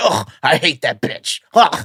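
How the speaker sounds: low, swooping, sulky voice. Retelling how a man on a show sounded: Napoleon Dynamite voice. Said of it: "he sounds like Napoleon Dynamite".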